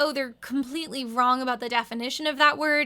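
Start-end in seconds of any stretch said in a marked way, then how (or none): none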